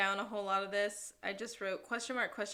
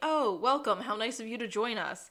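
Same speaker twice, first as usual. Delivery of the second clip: mock patronizing, superior, loud, condescending voice; 6 dB louder than usual. Recapping a scene where a detective greets late arrivals: imitating condescending greeting. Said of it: "tells the boys very condescendingly".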